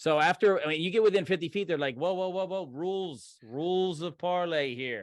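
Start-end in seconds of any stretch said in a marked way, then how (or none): 2.0-4.7 put-on Southern American accent with a drawl. Voicing a stranger calling for rules of parley: southern accent. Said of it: "he says in common with a southern accent".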